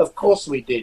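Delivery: ordinary talk, nothing marked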